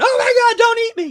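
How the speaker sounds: very high, very loud, shrieking tiny-spider voice. Imagining what the spider in his hand is saying: voicing the spider. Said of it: "The thing is probably on, in my hand going".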